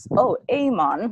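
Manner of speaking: very bad, high-pitched fake Jamaican accent. Explaining what people first think of Jamaica, in a terrible Jamaican accent. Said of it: "Very, very terrible accent".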